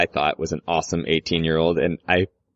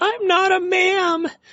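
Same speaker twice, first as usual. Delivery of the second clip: very high, slow, breaking adolescent voice. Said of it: "your voice just sounds terrible and it's cracking".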